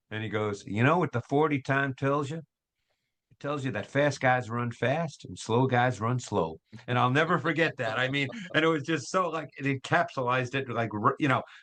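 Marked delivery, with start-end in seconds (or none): 0.6-6.6 put-on heavy Southern accent, laid on thick. Quoting a man who spoke to a group of younger scouts, in a thick southern accent. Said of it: "with that thick Southern accent".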